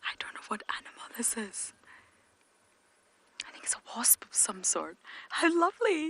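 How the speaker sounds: soft, hushed, barely voiced whisper. Lauren films a wasp on camera, trying not to disturb it; whispering. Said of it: "I'm whispering for a wasp".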